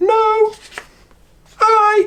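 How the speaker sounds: squeaky, very high-pitched silly voice. Speaker demonstrating different voices to use, in a high voice. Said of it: "High voice would be a bit like".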